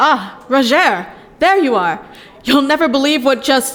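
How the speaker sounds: eager, fast, excited, bursting rush. Greeting someone who has just arrived with news, excited. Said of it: "You sound excited".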